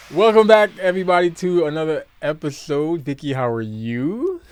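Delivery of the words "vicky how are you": unhurried, deliberate, slow, with "you" drawn out. Asking the other speaker how she is, back after a break: said slowly. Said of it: "I said that slowly".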